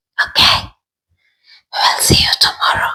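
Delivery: barely voiced, breathy whisper. Signing off a video from the bathroom with the door closed, whispering. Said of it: "Don't know why I'm whispering".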